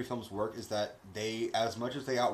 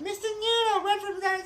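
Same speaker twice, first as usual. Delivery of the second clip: very high, cartoonish puppet character voice; 3 dB louder than usual. Showing the guys an Elmo impression. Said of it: "That's my Elmo impression for you guys".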